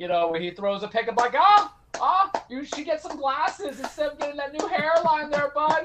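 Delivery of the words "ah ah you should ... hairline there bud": very high, raised-up voice. Mocking a quarterback who throws a pick, voice raised a bit: John Candy impression. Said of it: "I'll put on my best John Candy impression".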